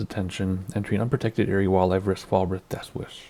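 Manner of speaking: usual speaking voice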